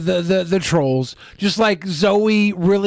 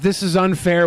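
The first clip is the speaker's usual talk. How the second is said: plain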